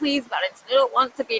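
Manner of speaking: tearful, begging through sobs. Retelling a plea to Valentine, imitating own past crying.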